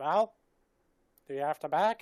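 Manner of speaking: goblin character voice. Storyteller narrating a goblin questioning a man about a bag, goblin voice. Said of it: "Love this voice acting".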